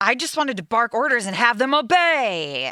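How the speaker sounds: aggressive, high, domineering, with "obey" stretched. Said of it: "the way he says it is so aggressive".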